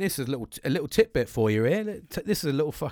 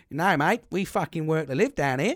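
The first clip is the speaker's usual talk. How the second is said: badly put-on, overdone, shocking Australian accent; 2 semitones higher than usual. Quoting what Australians say, in a shocking Australian accent. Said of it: "That was a shocking Australian accent".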